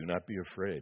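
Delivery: deep, commanding, authoritative voice. A voice addresses two young men bracing for impact, in a deep, authoritative voice. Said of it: "they heard a deep, authoritative voice".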